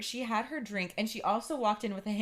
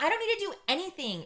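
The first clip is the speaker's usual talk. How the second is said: mock prickly defensive tone, pitched up; 8 semitones higher than usual. Retelling how Shelly answered when told to clean up, imitating Shelly's defensive retort. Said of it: "she was getting so defensive".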